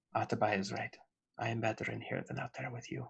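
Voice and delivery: meek, timid, very quiet, low, hushed little voice. In a role-play, a character answers from inside, in a timid voice. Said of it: "you hear this timid voice and he says".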